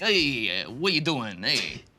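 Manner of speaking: very slow, drawn-out delivery. Asked to give a best Detective Pikachu voice: Detective Pikachu voice. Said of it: "give me a best Detective Pikachu voice".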